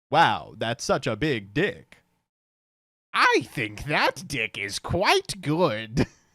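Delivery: synthetic, computer-read text-to-speech voice. Describing how people in porn sound, talking in the AI text-to-speech voice. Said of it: "talking in the A I voice".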